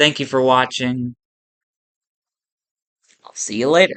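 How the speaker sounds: mocking, tongue-in-cheek, sarcastic tone. Signing off to the viewers after watching: sarcastic tone. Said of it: "That was really sarcastic".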